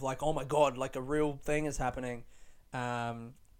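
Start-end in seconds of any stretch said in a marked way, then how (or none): none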